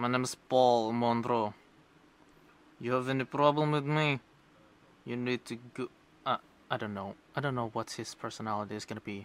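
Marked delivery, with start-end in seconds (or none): 0.0-5.9 put-on Russian-accented character voice. Assigning character accents, Paul Monroe introduces himself: Paul Monroe's Russian accent. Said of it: "a Russian accent that is going to be like this".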